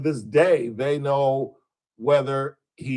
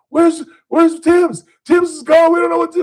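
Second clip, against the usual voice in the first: very high-pitched, loud, frantic panic; 7 dB louder than usual. Retelling a nine one one call from men on a sinking boat: imitating panicked men. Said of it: "these guys were panicked".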